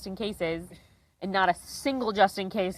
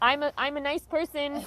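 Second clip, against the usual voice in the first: play-acted bright, eager, nervous, lively, pitched-up pleading; 6 semitones higher than usual. Retelling begging a bus driver for help: imitating own lively nervous pleading. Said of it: "and I'm trying to be lively".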